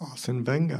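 quiet whisper. Announcing the award winner to the others: whispering. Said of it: "That was a nice little whisper".

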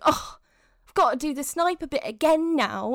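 grumbled out on a sigh. Retelling how she took the game controller back, imitating her sighing. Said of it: "she takes the controller from me sighing".

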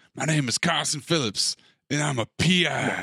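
put-on, mock Texas accent. Recapping a movie, quoting a character's line in a texas accent. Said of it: "he's doing a Texas accent".

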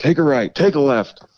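acted-out, very high, loud yelling. Retelling a man yelling directions on the way to the jail, retelling a yell. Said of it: "He's yelling at me".

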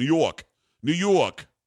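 slow, drawn-out, thick fake New York accent.

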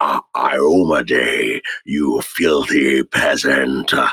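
speaking slowly in character. Describing how a character talks, demonstrating his line in a slow-spoken character voice. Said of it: "his voice is kind of like, he speaks slowly".

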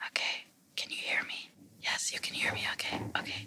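soft whisper, barely audible. Speaker demonstrating a whisper one meter from a decibel meter app, whispering. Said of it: "I am whispering".

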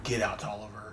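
very quiet, deep, low murmur. Retelling a comic scene, the speaker voices a man answering Tolliver's ranting: real low voice. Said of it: "And the man just like real low".

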